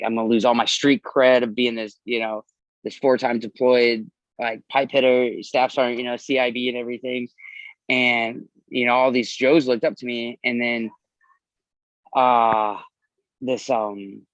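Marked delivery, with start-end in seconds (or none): none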